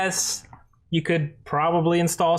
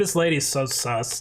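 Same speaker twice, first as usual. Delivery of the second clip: ordinary delivery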